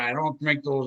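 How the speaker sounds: ordinary delivery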